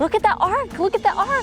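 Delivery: gasping with excitement. Touring a well-preserved cave in Israel, gasping excitedly.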